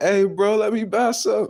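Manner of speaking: mock very high hollering shout. Retelling how buyers called out to buy food: imitating people yelling. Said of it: "Motherfuckers yelling at me like".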